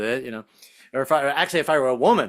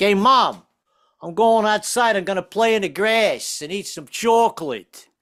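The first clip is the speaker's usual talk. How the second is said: put-on raised-pitch New Jersey accent; 6 semitones higher, 3 dB louder than usual. Recalling being nine and telling mom about going outside: New Jersey accent. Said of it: "I started saying things with that with that accent".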